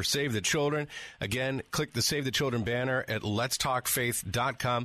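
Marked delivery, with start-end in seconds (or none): none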